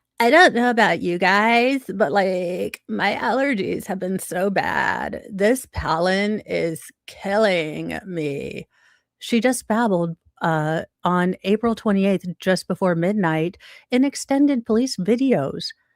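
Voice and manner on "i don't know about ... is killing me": creaky, fried put-on character voice, babbling. Getting into character as the woman in the police videos: put-on vocal fry voice. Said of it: "Excuse the vocal fry, I'm getting into character".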